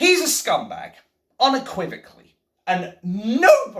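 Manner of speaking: voice breaking mid-sentence. Speaker condemning a man unequivocally, voice breaking. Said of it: "my voice is breaking".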